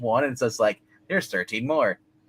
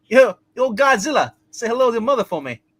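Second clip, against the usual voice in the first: very high, loud Boston accent; 11 semitones higher, 6 dB louder than usual. Reading a script line right after saying they can't do it, attempted boston accent. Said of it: "That just sounded like".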